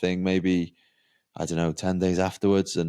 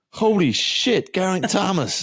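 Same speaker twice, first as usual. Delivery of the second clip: very high, swooping, slow put-on American accent; 12 semitones higher, 4 dB louder than usual. Retelling the driver's reaction on recognising the cyclist: imitating an american accent. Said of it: "That was my American accent".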